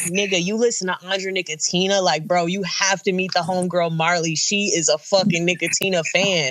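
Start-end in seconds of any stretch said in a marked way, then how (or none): none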